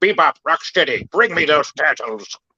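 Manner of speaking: put-on cartoon alien villain voice. Showing the others how the Krang voice goes: Krang voice. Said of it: "to do the Krang voice".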